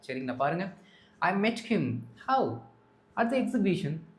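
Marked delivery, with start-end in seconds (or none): 2.2-4.0 how pitched up, then a clear pause. Teaching English phrasing with an example sentence: clear pause after how. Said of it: "அந்த how அப்படின்னு சொல்லும் பொழுது ஒரு pass கொடுத்து அதுக்கப்புறம் அடுத்த அந்த phrase இல்லாட்டி சென்டென்ஸ் ஆரம்பிங்க".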